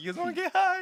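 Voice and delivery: very high-pitched stoner cartoon voice. Telling a story about his sister, speaker repeats his own question, Towelie voice. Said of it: "I sound like Towley from South Park".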